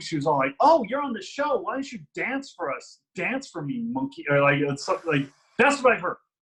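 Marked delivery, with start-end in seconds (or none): 0.6-4.2 mock derogatory, demeaning delivery. Retelling what a drunk fan said to the speaker, imitating a derogatory tone. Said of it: "she said it in such a derogatory manner".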